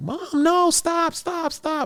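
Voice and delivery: very high, drawn-out scream. Retelling being pinned to a wall by her mom: imitating her own screaming. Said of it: "And I'm screaming".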